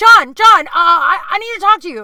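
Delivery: very loud, high, stumbling, panicked yell. Imitating a guy who avoids the speaker by yelling to another comedian: imitating someone yelling for a friend. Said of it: "he'll yell at the nearest comedian".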